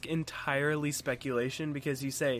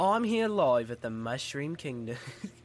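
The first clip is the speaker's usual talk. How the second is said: put-on Australian accent, live reporter voice. Joking about a British-accented Mario, reporting live: put-on Australian accent. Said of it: "that's Australian".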